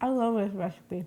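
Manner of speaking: talking with mouth full. Host takes a bite of the dish after saying goodbye, muffled, mouth full.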